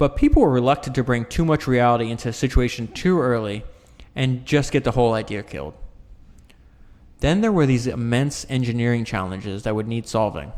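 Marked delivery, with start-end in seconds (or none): none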